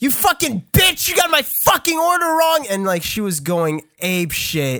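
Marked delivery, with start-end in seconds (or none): 0.0-2.6 acted-out, very high, angry, furious yell. Telling a story, the speaker acts out a woman yelling at the girl, imitating someone yelling. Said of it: "was yelling at the girl".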